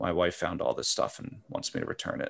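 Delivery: speaking low, voice kept in a low register. Retelling what a man said after setting bags on a store counter: low voice. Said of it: "he says in like a low voice".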